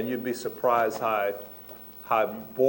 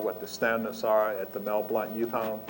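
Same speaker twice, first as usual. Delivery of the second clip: ordinary talk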